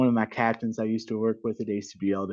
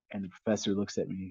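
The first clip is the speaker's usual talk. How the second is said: usual speaking voice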